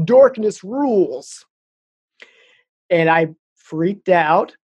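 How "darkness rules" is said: voice dripping with evil, pitched up. Retelling a dream of a phone voice, imitating voice dripping with evil. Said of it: "this very dripping with evil".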